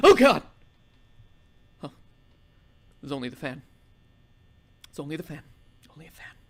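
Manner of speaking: frightened. Playing an intense game, you react to what was only a fan, scared. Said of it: "I am so scared right now".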